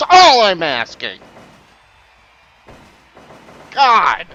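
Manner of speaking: upset and frustrated. Streamer telling viewers they hit a limit, upset and frustrated. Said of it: "I'm sorry I'm getting upset".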